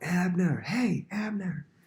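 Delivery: put-on angry taunting yell. Retelling a man yelling another man's name: retelling an angry yell. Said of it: "either angrily or antagonistically, he's yelling".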